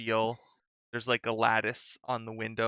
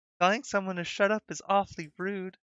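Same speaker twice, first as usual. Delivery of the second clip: put-on small, high, girlish young girl's voice; 8 semitones higher than usual. Playing a voice heard from behind, scolding someone for saying shut up, in a young girl's voice. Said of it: "like a young girl's voice".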